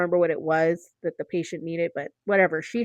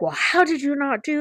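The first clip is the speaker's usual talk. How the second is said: acted-out high-pitched, scolding yell; 8 semitones higher than usual. Retelling how a lab tech scolded them: imitating someone yelling. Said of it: "I got yelled at by the lab tech".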